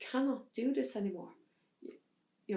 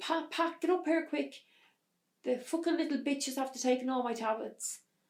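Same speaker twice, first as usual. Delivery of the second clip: mock shouting, much higher; 4 semitones higher than usual. Retelling how the mother shouted up the stairs to the father, imitating mother shouting. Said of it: "she's shouting".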